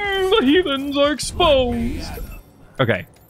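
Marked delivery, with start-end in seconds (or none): 0.0-2.1 very high-pitched, slow, drawn-out drawl. Echoing a line just heard from a character: Hedonism Bot voice. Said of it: "Why does his voice remind me of Hedonism Bot?".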